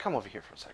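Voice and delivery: soft, hushed whispered aside. Voicing the innkeeper calling a player aside: whispering. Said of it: "whispers to you".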